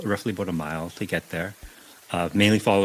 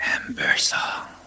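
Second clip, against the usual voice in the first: raspy, sandpapery voice, lower pitch; 4 semitones lower than usual. A game narrator voices someone behind the players, in a raspy sandpaper voice. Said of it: "a raspy voice like sandpaper".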